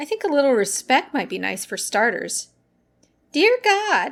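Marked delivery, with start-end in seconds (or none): 3.3-4.1 high, loud, funny mocking voice. A woman at the pool table mimics the narrator's prayer, in a mocking funny voice. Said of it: "she mimics in a funny voice".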